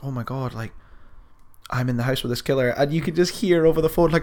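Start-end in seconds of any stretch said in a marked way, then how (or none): 0.0-2.7 put-on quiet dawning realization, quieter. Retelling how the girl on the phone reacts: imitating a girl quietly realizing. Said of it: "quietly kind of, like, coming to the realization".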